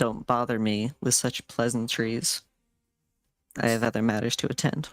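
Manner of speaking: hushed stage whisper in character voice. Voicing a character who turns to the guards: half-whispering in character. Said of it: "just in a whisper".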